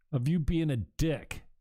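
ordinary delivery

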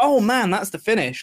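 fired-up, excited wrestling fan style exclamation. Retelling own reaction while watching a match: retelling own excited reaction. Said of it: "an excited".

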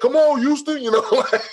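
put-on broad, heavy Louisiana accent, very high-pitched. Retelling what a man from louisiana kept saying: heavy louisiana accent. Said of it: "he got that heavy louisiana".

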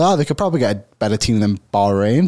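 ordinary talk, nothing marked

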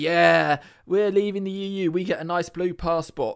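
sneering delivery. Mocking people excited about blue passports: imitating Brexit voters. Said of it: "All of you idiots that are like".

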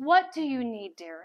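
put-on dainty English accent. Speaker retells what a woman said on looking up at them: little English accent. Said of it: "In her little English accent".

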